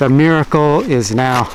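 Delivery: plain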